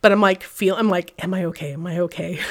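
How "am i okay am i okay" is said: acted, choked-up, fighting hard to hold back tears. Retelling lying hurt after a fall down stairs: imitating holding back tears. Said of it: "trying not to cry".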